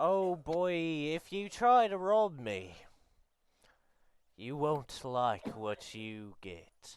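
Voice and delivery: put-on young, youthful-sounding delivery. Retelling what an old-looking character said, in a young-sounding voice. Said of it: "Even though he sounds very young".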